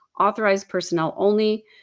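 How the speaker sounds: usual speaking voice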